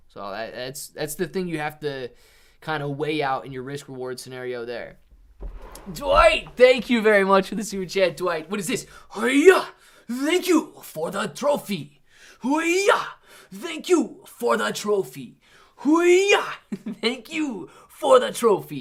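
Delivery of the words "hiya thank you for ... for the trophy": put-on samurai voice, high, slow and drawn-out. Thanking a viewer for a super chat trophy, in a put-on samurai voice. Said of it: "It's my samurai voice".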